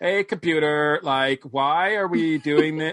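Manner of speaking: put-on dreamy, zoned-out, spacey California valley girl voice. Imitating how a woman talked, in a spacey California girl voice. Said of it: "like some sort of like zoner, like California girl".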